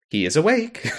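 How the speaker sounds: cheerful automated announcer. Telling a listener how the station computer voice announced someone, cheerful station computer voice. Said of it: "the computer voice lady just goes".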